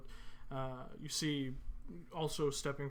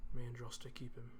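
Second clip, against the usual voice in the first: muttered under breath, lower and quieter; 2 semitones lower, 3 dB quieter than usual. As villagers nod at a farewell to a dead man, a sister mutters under her breath. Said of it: "kind of mutter under her breath".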